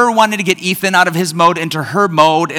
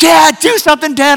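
put-on, high-pitched full screaming, calling out; 11 semitones higher, 4 dB louder than usual. Dad recounts how she screamed at him to act, imitating someone screaming. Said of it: "just as she's screaming".

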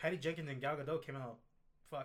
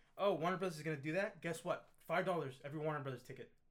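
plain

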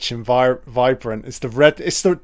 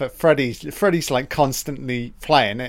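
normal talking voice

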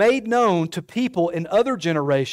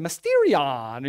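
put-on Italian accent; 4 semitones lower than usual. Recalling how the word was said in week one: Mario voice. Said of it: "we said it like Mario".

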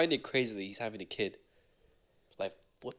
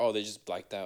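ordinary talk

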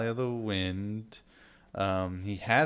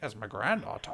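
cranky, grumpy man's voice; 4 dB quieter than usual. Recounting a film scene, the speaker imitates a grumpy character's reply: grumpy character impression. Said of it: "Good impression there".

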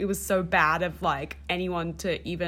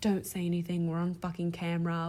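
put-on muttering under the breath; 4 dB quieter than usual. Recapping a scene of a woman leaving a party, the speaker quotes her, imitating muttering under breath. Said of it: "muttering under her breath".

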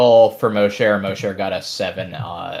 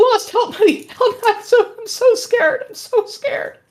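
put-on scared, frightened child's voice, pitched much higher. Telling the group what they hear from a kid in the woods: scared child's voice. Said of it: "you just hear this kid off in the woods saying".

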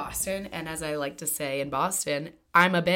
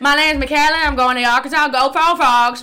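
shrill, very loud pageant-contestant announcer voice; 8 semitones higher, 12 dB louder than usual. Imitating a pageant contestant introducing herself: imitating a pageant contestant. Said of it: "pageant stars".

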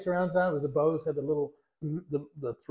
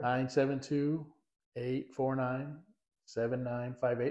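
slow, drawn-out delivery, quieter; 2 semitones lower, 7 dB quieter than usual. Giving out a phone number so listeners have time to write it, speaking slowly. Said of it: "I say it slow so you have time".

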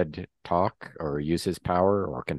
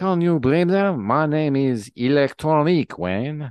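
put-on French accent, pitched high and raised; 8 semitones higher, 6 dB louder than usual. Narrating a story, voicing Electronique introducing herself to Wayne, in a French accent. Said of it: "she's talking with a French accent".

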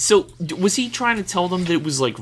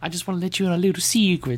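put-on Italian-accented falsetto voice, higher pitch; 3 semitones higher than usual. Voicing Ponzi revealing his identity to a shipmate: falsetto Ponzi voice. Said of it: "Why are you giving him falsetto?".

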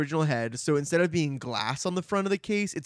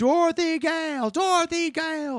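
put-on screaming, much higher, slower; 13 semitones higher, 4 dB louder than usual. Retelling a scene where the other heads yell at Dorothy: imitating screaming heads. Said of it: "They're all just screaming".

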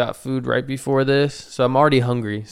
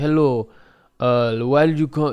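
put-on Russian accent, loosely and roughly done. Quoting a woman in scrubs who greeted the speaker, imitating a Russian accent. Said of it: "it sounds like she has a Russian accent".

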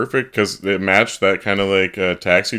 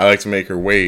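ordinary talk

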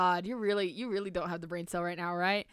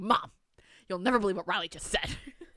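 put-on gossipy, busybody tattling voice. Retelling tattling to mom: imitating a busybody neighbor. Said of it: "like a little busybody ass neighbor".

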